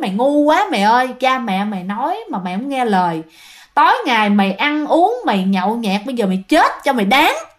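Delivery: ordinary talk, nothing marked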